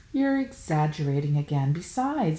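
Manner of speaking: ordinary delivery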